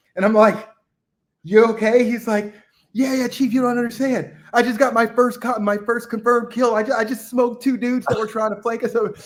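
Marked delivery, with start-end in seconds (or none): 2.9-9.2 mock bursting with excitement, eager. Retelling a story under gunfire, quoting a man's first confirmed kills, imitating him excited. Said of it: "so excited".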